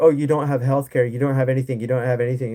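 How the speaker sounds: mock teasing, taunting tone. Imitating critics making fun of Americans: imitating a mocking taunt. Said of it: "they're trying to make fun of Americans".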